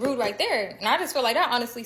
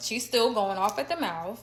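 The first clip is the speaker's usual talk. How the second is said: usual speaking voice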